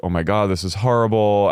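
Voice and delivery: put-on tearful, crying voice. Retelling how Jen reacted at Chippendales, imitating Jen in tears. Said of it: "She's in tears".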